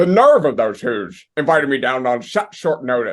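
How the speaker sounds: put-on loud, big, cranky cartoon-grouch grumble. Asked to do it on the podcast, Grinch voice. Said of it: "in the voice of the Grinch".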